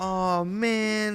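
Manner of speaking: put-on disappointed kid voice. Imitating a daughter who can't find her chocolate: imitating a sad child. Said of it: "she's sad".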